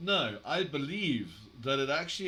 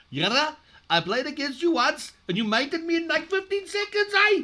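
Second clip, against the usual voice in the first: fake Canadian accent, very high and very loud; 14 semitones higher, 9 dB louder than usual. Reading out a written message addressed to yara: put-on accent. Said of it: "next piece in my best colored accent".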